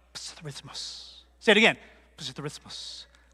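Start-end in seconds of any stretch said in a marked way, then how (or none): 0.1-1.1 rapid, rushed, breathy whisper. Leading a group in saying a word: quiet and really fast. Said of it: "say it quietly and really fast".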